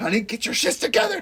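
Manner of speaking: put-on yelling. Recounting a movie scene where she yells at him as he loses his mind, retelling a yell. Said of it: "she's like yelling at him".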